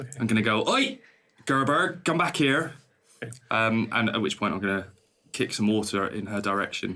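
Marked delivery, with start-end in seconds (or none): 0.7-2.7 drawn-out, high shouting. In a role-play game, the character shouts after a girl stealing herbs: shouting after someone. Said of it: "I'm going to have to shout after her".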